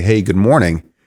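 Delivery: normal talking voice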